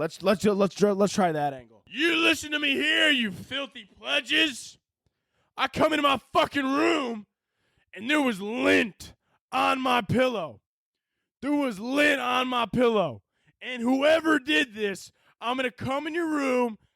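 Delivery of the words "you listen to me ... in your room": higher-pitched military drill-instructor tirade. Trying a military voice with frat-kid wording, addressing pledges: military voice. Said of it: "I'm going to go for the military voice".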